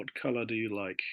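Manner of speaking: normal talking voice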